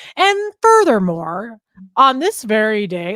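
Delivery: grand podium oratory, sing-song, tones rising and falling. Recalling a man speaking at a podium, speaker imitates his rising and falling tones. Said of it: "go up and down the tones of his voice".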